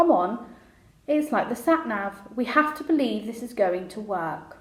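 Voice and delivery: ordinary talk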